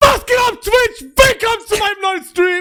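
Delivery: very high, loud, pumped-up, hyped streamer voice. Demonstrating a twitch stream intro for someone to copy: high-energy streamer intro. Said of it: "da muss mehr Energie rein".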